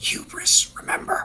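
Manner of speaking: hushed, whispered voice. Speaking in character to a companion after a declaration: whispering. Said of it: "I whisper".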